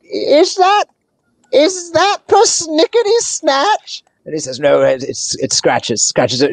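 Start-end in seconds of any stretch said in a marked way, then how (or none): 0.2-4.1 put-on very high-pitched elderly gnome character voice. Storyteller voices an old gnome looking up at a guest, old gnome voice. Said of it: "the old gnome looks up and says".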